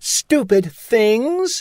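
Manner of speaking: loud, indignant, scornful, high-pitched outburst. Alice speaks up in the court during the trial, in a loud, indignant voice. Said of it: "in a loud, indignant voice".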